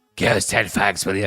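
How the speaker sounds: put-on low character voice. Guessing TV characters, the speaker does Vera asking Jack for cigarettes: low, deep Vera voice. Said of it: "Her voice progressively got lower and deeper".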